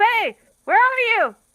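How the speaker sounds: shrill, very loud, high-pitched yell. Playing a character calling out to another character, yelling out. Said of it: "just yells out".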